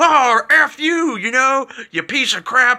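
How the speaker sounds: very high-pitched, drawn-out swearing tirade. Retelling how the churchgoers talked on a weekday: imitating the adults cursing. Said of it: "And then I'd see them on, like, Tuesday, like".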